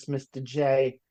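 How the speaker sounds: sassy put-on Brooklyn accent. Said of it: "that kind of Brooklyn accent with the sassiness".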